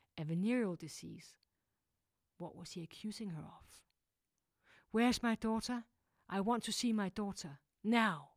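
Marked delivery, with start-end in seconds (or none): 5.0-8.2 loud, hoarse, defiant voice. A woman demands to see her daughter, staring at the doctor; loud and hoarse. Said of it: "Her voice was loud and hoarse".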